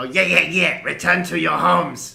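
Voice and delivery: very loud, rough, raucous crowd-like roar. Voicing a crowd of skeletons mocking an order: skeletons bellowing. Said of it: "the skeletons all bellow".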